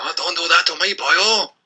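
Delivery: bad Welsh accent. After a first try that did not sound welsh, try again in a bad welsh accent. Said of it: "is that better?".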